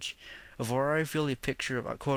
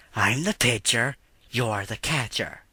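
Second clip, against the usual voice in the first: loud, admittedly poor cartoon character voice; 5 dB louder than usual. Describing a cartoon scene, quoting the character's line: bad Ren impression. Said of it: "I know it's a bad impersonation".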